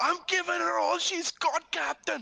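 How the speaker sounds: very high, loud shout. Yelling over the radio to the captain in character: yelling over the radio. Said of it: "All I'm yelling ab-, over the radio is".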